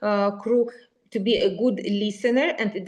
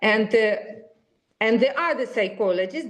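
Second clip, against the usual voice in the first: normal talking voice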